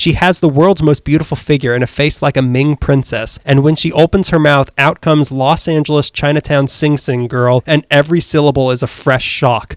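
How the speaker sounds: ordinary talk, nothing marked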